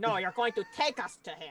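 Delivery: aggressive forceful delivery. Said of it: "You're finally being aggressive".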